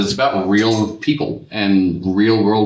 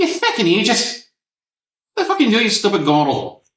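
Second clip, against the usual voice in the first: put-on Scottish or Irish accent, much higher; 12 semitones higher than usual. Showing how a scottish or irish person swears: scottish or irish accent. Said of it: "a Scottish or Irish person".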